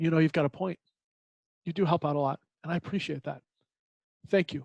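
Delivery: level, calm, quiet, reassuring tone. Retelling how he answered her while she kept yelling, speaking calmly and quietly. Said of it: "So I said calmly and quietly".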